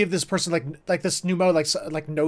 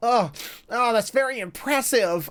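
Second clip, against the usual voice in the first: high, nerdy put-on voice; 6 semitones higher than usual. Mimicking a voice line just heard: nerd voice. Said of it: "Doesn't it sound like a nerd voice?".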